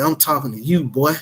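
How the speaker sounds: put-on hostile voice. Retelling what a man outside the house said: imitating a hostile voice. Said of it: "Like this".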